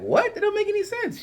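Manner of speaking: high-pitched, shocked disbelief. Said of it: "We were like".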